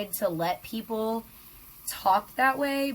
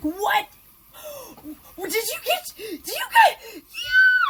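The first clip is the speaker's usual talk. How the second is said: very high, stunned, swooping freaking out; 5 dB louder than usual. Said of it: "I freaked out".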